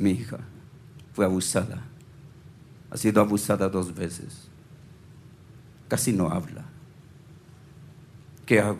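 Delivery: soft, low, confiding voice, very close to the ear.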